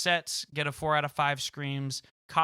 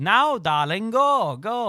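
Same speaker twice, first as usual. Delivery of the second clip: very loud, slow, high, belted-out voice; 7 semitones higher, 9 dB louder than usual. Retelling what a woman said while making faces at them, doing an Edna voice. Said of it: "very um Edna from Incredibles".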